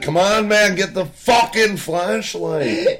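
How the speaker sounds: put-on shrill, loud yell. Retelling a water leak, urging a worker with a flashlight: imitating his own yelling. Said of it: "I start yelling".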